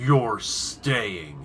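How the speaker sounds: very deep, dark man's voice. Retelling how a voice answered an investigator upstairs, in a very deep male voice. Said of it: "in a very deep male voice".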